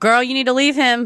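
put-on loud yell. Retelling reacting to relationship advice on the phone, imitating own yelling at phone. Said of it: "Why are you yelling at your phone?".

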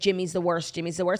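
ordinary talk

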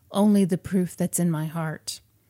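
normal talking voice

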